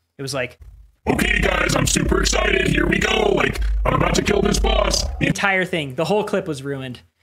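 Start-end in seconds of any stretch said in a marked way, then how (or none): 1.1-5.1 voice-straining, forced put-on streamer-style voice. Recreating a recording accidentally made with a voice mod on: imitating own voice-mod voice. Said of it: "I'll just do it 'cause it hurts my voice".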